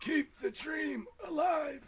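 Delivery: very high-pitched, slow delivery. In a conversation, the speaker slips into a Forest Whitaker impression. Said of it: "Right in that Bernie voice. / I was going for uh, ... Forrest Whitaker in Rogue One".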